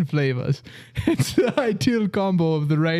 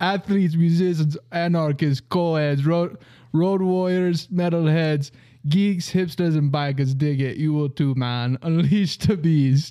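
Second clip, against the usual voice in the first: full put-on Jamaican accent throughout. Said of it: "if your Dungeons and Dragons character is not Jamaican".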